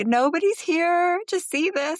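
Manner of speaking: mock tearful, very high-pitched, slow drawn-out words. Retelling finding a tiny donkey and cow by a field: retelling own crying words. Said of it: "I'm fucking crying".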